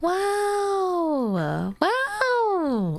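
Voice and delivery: voice cracking. Mid-task, speaker exclaims in surprise, voice cracking. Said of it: "my voice cracked".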